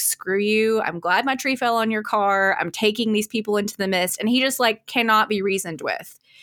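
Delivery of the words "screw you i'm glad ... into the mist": normal talking voice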